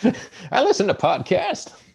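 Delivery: very high, put-on elderly old man voice. Teasing the other speaker that he is still hip, in an old man voice. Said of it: "that was an old man voice".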